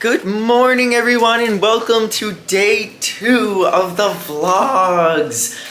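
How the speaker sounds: squeaky, very high voice, cracking and breaking. Opening a morning vlog, voice cracking. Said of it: "My voice just cracked".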